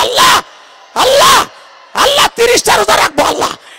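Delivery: calling out loudly. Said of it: "ডাক দিয়ে বলো".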